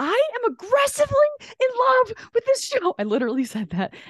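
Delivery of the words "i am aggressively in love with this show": very high, loud, gushing excited shriek. Walking out after a show, the speaker recalls what they said to her: retelling a scream. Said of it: "And I was screaming".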